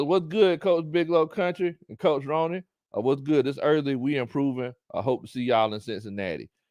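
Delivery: ordinary talk, nothing marked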